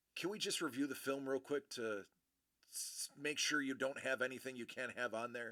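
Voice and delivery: play-acted, hushed, very soft, far gentler, nicer voice. Retelling what a man checking their footage asked, imitating his much nicer voice. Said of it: "in a much nicer voice".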